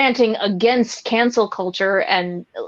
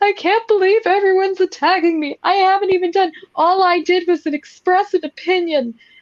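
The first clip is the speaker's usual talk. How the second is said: put-on, exaggerated, very high sobbing indignation; 9 semitones higher than usual. Imitating people online who feel attacked: imitating outraged crying. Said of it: "caricaturish there with, with the crying".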